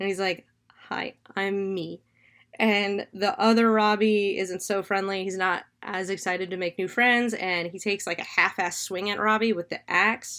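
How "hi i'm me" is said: put-on nervous voice. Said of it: "really, like, nervously".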